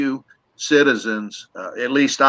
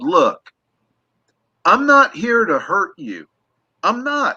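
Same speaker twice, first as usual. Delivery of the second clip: imitated raised voice, higher; 7 semitones higher than usual. Retelling calling out to the forest after dark: retelling loudly speaking out. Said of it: "not yelled out, but loudly spoke out".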